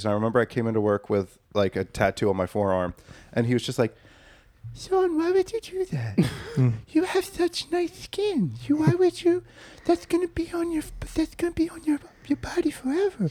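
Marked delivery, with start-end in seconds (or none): 4.8-13.3 high half-whisper, swooping up and down in pitch. Act out a man at work reacting to Sean's new tattoo, half-whispering like Droopy Dog. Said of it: "he literally whispers".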